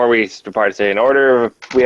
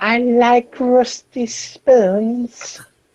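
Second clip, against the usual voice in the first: put-on creepy character voice, higher; 12 semitones higher than usual. Doing an impression of Salad Fingers: Salad Fingers impression. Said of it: "It was a salad fingers impression".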